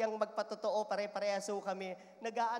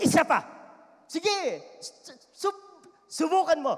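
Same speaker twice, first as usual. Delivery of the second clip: enraged, furious yell, high and very loud; 7 semitones higher, 11 dB louder than usual. Acting out a parent scolding a child: imitating an angry parent. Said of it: "talagang galit".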